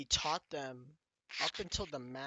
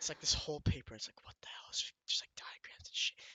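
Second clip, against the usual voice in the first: hushed whisper. Describing a paper full of diagrams, whispering. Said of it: "I'm whispering right now".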